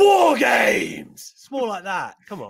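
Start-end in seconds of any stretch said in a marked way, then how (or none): 0.0-1.3 mock forceful, loud, high, punched-out shout. Show the other speaker the way Regal said it, punched like Regal. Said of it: "the way like Regal punched it".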